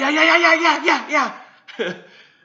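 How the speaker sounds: eager, thrilled voice. Retelling a story, the speaker imitates how excited that guy got. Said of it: "that guy got so excited".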